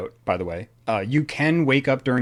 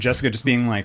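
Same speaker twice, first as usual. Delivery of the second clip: ordinary delivery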